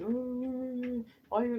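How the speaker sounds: very high, loud, tearful crying, acted out. Retelling how he called back after she hung up: imitating him crying. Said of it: "he called back crying".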